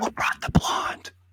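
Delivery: hushed, breathy, whispered stage whisper. Acting out Trump's question at Thanksgiving in Trump Tower, try a stage whisper. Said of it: "I was trying to stage whisper that".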